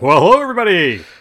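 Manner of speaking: very loud, showy radio announcer voice. Asked by a co-host to do a quick ad, doing a radio voice. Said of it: "Do your best, uh, radio voice".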